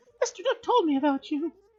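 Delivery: very high, squeaky, bad put-on cartoon girl voice. Voicing the new support staff member greeting Chris, Mickey Mouse-like female voice. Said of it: "I'm going for a female voice or if I'm going for Mickey Mouse".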